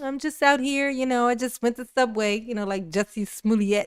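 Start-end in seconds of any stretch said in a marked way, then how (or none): 0.0-2.4 innocent, nice-guy voice. Voicing the fleeing driver, who is playing very nice: mock-innocent suspect voice. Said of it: "playing very nice with the road. Like".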